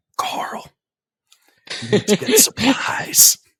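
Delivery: put-on loud whispering voice. Doing an impression of Rick from The Walking Dead, Rick loud whisper. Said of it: "It's that loud whisper".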